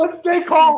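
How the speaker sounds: high, loud, mock panicked voice.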